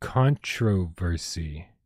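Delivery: controversy drawn out very slowly, syllable by syllable.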